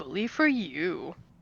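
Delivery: silky, soft, smooth, taunting mocking tone. Voicing a recording the group hears, Knockout's smooth mocking voice. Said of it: "a rather smooth, um, but mocking voice going".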